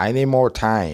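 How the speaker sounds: ordinary delivery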